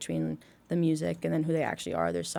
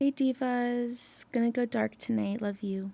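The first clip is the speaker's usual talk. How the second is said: read out high-pitched and slow; 5 semitones higher than usual. Answering a request to do the moon sending a tweet: the moon sending a tweet. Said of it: "Give me your best impression of the moon sending a tweet".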